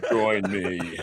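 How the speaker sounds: menacing, threatening villain voice. Acting out a scene with another speaker, taking the Vader part: Darth Vader voice. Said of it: "I get to be Vader".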